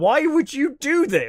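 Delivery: high, loud, slow shout. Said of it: "literally are just shouting at the screen".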